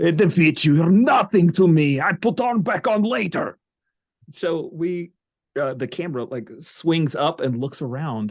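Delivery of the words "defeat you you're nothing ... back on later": loud, pitched-up, bad put-on Russian accent. Voicing a character's taunt to a monster in a bad russian accent. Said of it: "in a bad Russian accent".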